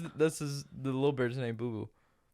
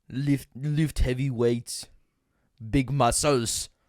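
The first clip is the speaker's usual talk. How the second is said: put-on Austrian movie-star voice, louder; 9 dB louder than usual. Doing impressions when asked: Arnold Schwarzenegger impression. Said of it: "Okay, Arnold".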